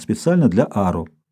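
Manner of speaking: ordinary delivery, nothing marked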